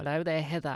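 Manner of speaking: bad, unconvincing put-on Australian accent. Doing a bad Australian accent as a colleague greeting Heather. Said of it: "not real Australian accent".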